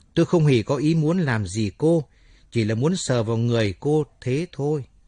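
ordinary delivery

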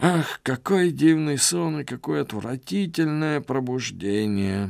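high, groaning lament. Pedro, looking around after waking from a dream, groaning. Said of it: "простонал Педро".

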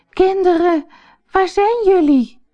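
very high, searching calling cry. The mother goat comes home and calls for her kids: calling out. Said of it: "riep ze".

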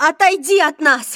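high-pitched yell at the top of the lungs. Narrator reading a woman's cry at a man gripping a candlestick, shouting very loudly. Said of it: "закричала она так громко".

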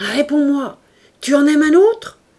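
very loud, high, trembling shout shaking with fury. Reading a man's demand to the woman pleading with him: trembling voice. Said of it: "Sa voix tremblait".

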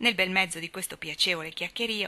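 plain reading voice

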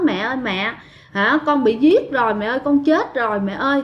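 ordinary delivery

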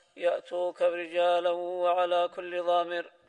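plain

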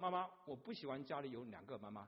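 plain

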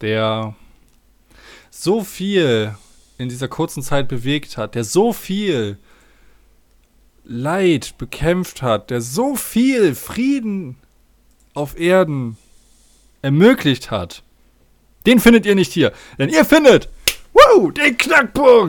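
slow, grand, soaring mock-epic trailer voice build-up.

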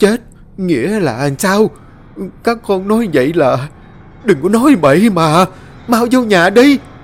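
shaky, stuttering voice. A mother hears her children say they have died, trembling, stammering. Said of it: "bà run lẩy bẩy lắp bắp".

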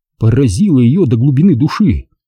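ordinary delivery

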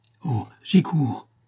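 crying out, exclaiming. A man answers a mother begging for a surgeon for her son; exclaiming. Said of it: "s'écria Gilbert".

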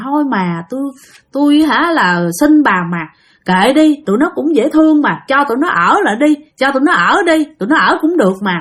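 put-on gentle old man voice, pleading tone.

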